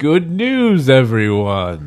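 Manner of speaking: sing-song, animated delivery with pitch swooping up and down. Picturing a small pet that runs around quoting: Professor Putricide voice. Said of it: "sometimes he says".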